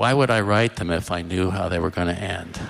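dry, matter-of-fact, deadpan, instant delivery. Retell Mr. Leonard's answer to someone who raised their hand, imitating a deadpan reply. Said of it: "Deadpan, doesn't miss a beat. He goes".

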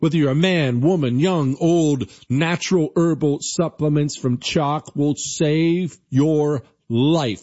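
high, fired-up, pumped delivery. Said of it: "Do I sound fired up to you?".

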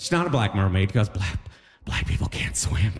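whispered voice. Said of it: "why are you whispering?".

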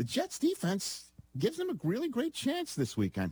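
put-on voice pushed way up high. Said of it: "still gotta go high register".

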